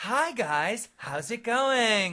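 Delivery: fake high-pitched little-girl voice. Retelling the waitress greeting them at Applebee's, fake little-girl voice. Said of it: "the waitress comes over and she's like ... fake".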